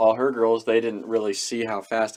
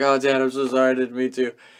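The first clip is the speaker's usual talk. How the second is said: put-on fake crying, mock tearful; 3 semitones higher than usual. Retelling apologizing to Dad after a car crash, retelling fake crying. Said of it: "give him a little bit of the fake tears".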